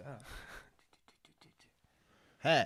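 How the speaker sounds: hushed, soft, breathy whisper. Retelling what a woman who was getting really high said, retelling a whisper. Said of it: "she whispers".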